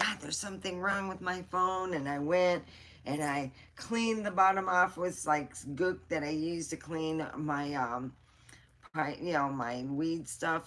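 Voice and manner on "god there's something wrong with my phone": put-on panicky, rushed, freaked-out voice. Retelling own reaction to a phone problem: retelling own freaking out. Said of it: "freaking out, going".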